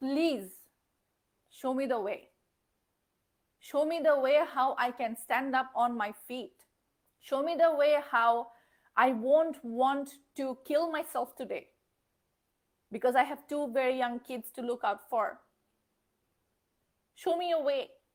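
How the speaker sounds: ordinary talk, nothing marked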